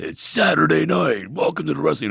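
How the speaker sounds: shrill, booming wrestling arena announcer voice. Speaker recalls trying out for WWE and demonstrates it: WWE announcer voice. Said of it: "I tried out for W W E once".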